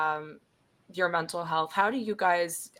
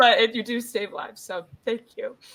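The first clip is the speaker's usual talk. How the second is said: voice catching, pitched up, choking up, near tears; 5 semitones higher, 4 dB louder than usual. Talking with the other speaker, on the verge of crying: choking up, about to cry. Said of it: "I am gonna cry a little bit".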